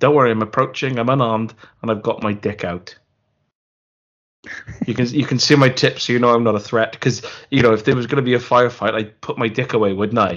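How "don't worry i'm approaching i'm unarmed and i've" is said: plain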